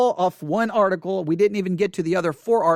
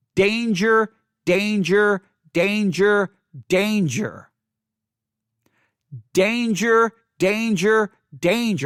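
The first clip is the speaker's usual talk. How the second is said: slow, sci-fi robot voice. Repeating a warning word over and over: Lost in Space robot voice. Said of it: "I could sound like the robot on Lost in Space".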